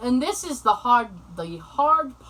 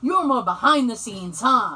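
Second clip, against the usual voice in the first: sassy, quippy delivery with plenty of sass; 4 dB louder than usual. Retelling what the lady said in reply: imitating a sassy tone. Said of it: "in a sassy way".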